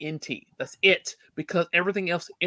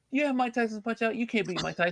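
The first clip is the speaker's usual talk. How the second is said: put-on smug, snotty, bratty teenager voice; 4 semitones higher, 4 dB quieter than usual. Retelling how an eighteen-year-old doubted him: imitating a snotty kid. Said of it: "little snotty little kid".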